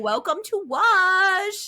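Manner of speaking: put-on high, childlike baby talk. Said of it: "she'd do actual widow baby voice, like".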